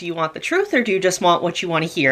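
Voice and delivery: ordinary talk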